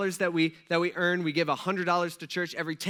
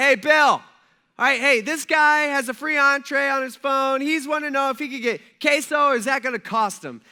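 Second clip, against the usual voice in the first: loud, high yell bellowed at the top of the lungs; 8 semitones higher, 8 dB louder than usual. Retelling how a worker asked the register guy across the restaurant: imitating someone yelling loudly. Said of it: "he yells at the top of his lungs".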